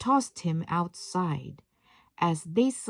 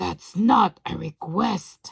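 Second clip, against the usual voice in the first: menacing, gruff, rough-edged, threatening beast voice. A character who has never been disobeyed answers Belle in a gruff, threatening voice. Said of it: "In a gruff, threatening voice".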